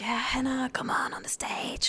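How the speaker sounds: husky, breathy, half-whispered tone. Retelling a teacher calling her up onto the pub stage: imitating a teacher's husky tone. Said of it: "with his husky tone".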